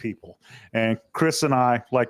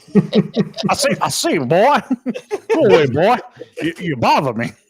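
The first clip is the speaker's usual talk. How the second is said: blustery cartoon rooster voice, loud and swooping; 6 semitones higher, 6 dB louder than usual. Asked whether anyone says he sounds like a cartoon character, speaker answers, Foghorn Leghorn voice. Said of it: "you sound like Foghorn Leghorn".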